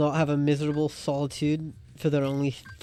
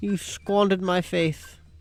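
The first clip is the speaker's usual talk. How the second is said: affected, put-on British accent; 4 semitones higher than usual. Trading accusations with the other speaker, in a put-on British accent. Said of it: "You're taking up that British accent".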